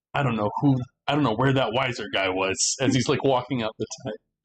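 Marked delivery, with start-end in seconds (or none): 0.1-2.7 muttered aside, murmuring quietly to himself. Voicing a frustrated character leaving, murmuring in character. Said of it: "Brahm is just murmuring".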